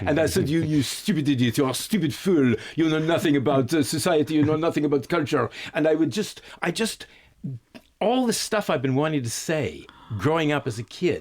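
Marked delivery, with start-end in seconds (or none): 0.5-5.5 pompous, condescending put-on French accent. Retelling insulting a father in a put-on voice: posh condescending french accent. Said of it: "I gave it to him with a French accent".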